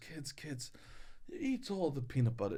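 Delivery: put-on hushed Swedish accent. Speaker quotes their grandmother pulling the kids aside, in her Swedish accent. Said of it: "She had an accent".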